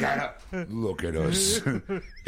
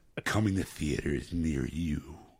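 lower movie trailer voiceover announcer voice; 7 semitones lower than usual. Offering to step in as the voiceover guy: movie trailer voiceover voice. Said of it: "I'll be the voiceover guy".

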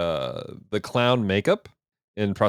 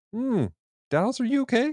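high, incredulous voice. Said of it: "makes people go".

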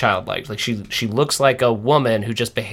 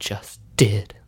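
under-breath muttered aside, much lower pitch; 3 semitones lower than usual. Recounting a scene, the speaker acts out her retort as he walks away, under her breath. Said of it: "she says it under her breath".

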